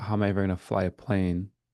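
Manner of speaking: plain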